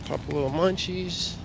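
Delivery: ordinary delivery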